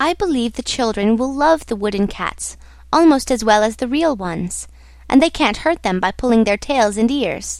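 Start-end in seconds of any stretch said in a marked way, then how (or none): none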